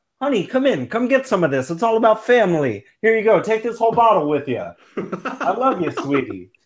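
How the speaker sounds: put-on Italian accent. Joking while handing a bottle of wine to family: put-on italian accent. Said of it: "if you've had that Italian accent since you got home".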